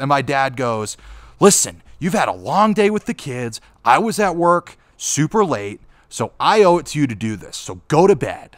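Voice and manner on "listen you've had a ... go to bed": arguing at full shout, raised yelling voice. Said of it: "what they were yelling at each other over".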